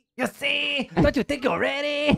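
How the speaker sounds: very high, loud put-on Mexican accent. Voicing what someone is waiting to say, in a Mexican voice. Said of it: "Mexican voice".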